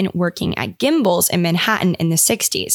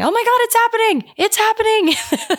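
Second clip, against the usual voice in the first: stretched-out exclamation, way up high; 14 semitones higher than usual. Quoting a TikTok sound of a character's reaction: imitating Michael Scott. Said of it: "Michael Scott saying".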